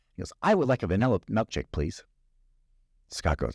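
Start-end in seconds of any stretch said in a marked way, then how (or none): none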